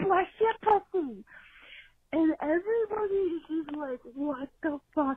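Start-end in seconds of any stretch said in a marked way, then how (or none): 0.0-1.2 mock high-pitched yell, shouted out loud. Retelling an elderly woman standing up in a seafood restaurant, retelling a yell. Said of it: "just yelling".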